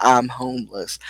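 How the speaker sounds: plain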